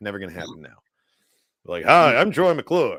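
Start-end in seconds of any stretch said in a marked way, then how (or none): 1.8-3.0 loud, slow, booming, schmoozy host voice. Speaker wishes a late actor had voiced a Star Wars droid, doing a Troy McClure voice. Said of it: "Would have been such a good like schmoozy droid".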